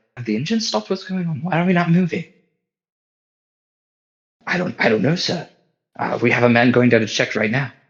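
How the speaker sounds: hurried, rushed whisper. Voicing crew members checking a stopped engine: hurried whisper. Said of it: "hurriedly whispering".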